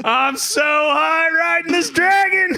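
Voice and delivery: mock screaming. Retelling screaming at the screen while playing: retelling own screaming. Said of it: "I'm just screaming at the screen going".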